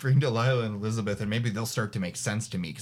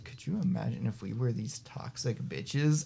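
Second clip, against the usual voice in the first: grumbled, mumbled mutter under the breath; 5 dB quieter than usual. Recounting what a man said, retelling a mutter under breath. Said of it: "kind of mutter under his breath".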